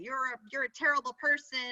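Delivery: ordinary talk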